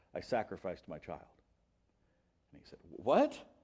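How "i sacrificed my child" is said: imitated mumble under breath, much lower and quieter. Retelling what a theological heavyweight answered when asked about his career, retelling a mumble under breath. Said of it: "mumbles under his breath and says".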